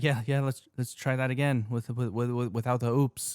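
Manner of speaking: put-on halting, stuttering delivery. Quoting a movie line with a stutter: Jeff Goldblum stutter. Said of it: "he tends to do that kinda stutter".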